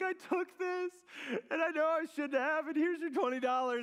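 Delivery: put-on tearful crying. Retelling confessing to mom as a kid, imitating own crying. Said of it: "I'm just bawling my eyes out".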